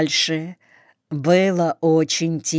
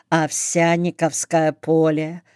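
usual speaking voice

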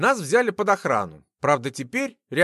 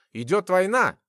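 ordinary delivery

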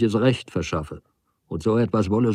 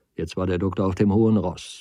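ordinary delivery

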